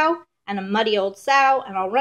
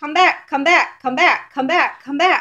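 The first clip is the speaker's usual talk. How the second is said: yelling, high and loud; 5 semitones higher, 5 dB louder than usual. Reading a story aloud, the chasers call after the gingerbread man: yelling. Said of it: "they were yelling".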